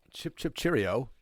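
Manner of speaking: poorly done put-on British accent. Joking with co-hosts about a guest from London, doing a fake British accent. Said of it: "please don't do fake British accents".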